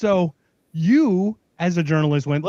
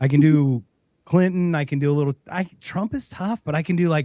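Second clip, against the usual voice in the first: usual speaking voice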